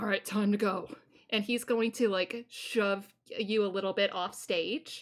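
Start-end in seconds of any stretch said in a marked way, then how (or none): 0.0-0.9 very gruff, blunt voice. Game master voices Isaac ushering a player off stage, gruff Isaac voice. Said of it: "very gruffly goes".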